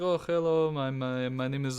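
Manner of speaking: put-on Eastern European accent. Retelling what a guy from Albania said when sitting down beside him, Slavic Eastern European accent. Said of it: "they still kind of have that Slavic Eastern European accent".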